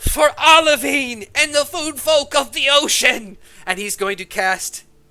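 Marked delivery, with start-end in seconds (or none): 0.0-3.4 very loud, high-pitched yelled battle cry. Voicing a character casting a spell, yelling a battle cry. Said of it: "bring his hands up and yell".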